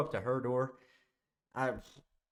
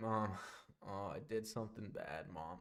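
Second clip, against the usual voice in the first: soft, quivering, pleading voice. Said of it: "That's literally exactly how I sounded".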